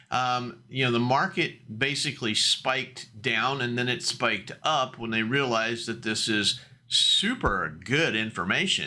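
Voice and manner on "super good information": thick, mocking sarcasm with swooping pitch. Breaking down market numbers, commenting on the news with heavy sarcasm. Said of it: "I say that with a lot of sarcasm".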